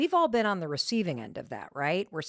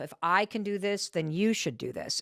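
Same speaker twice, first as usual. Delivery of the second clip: judgmental tone, heavy stress on should. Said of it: "I'm emphasizing the word should".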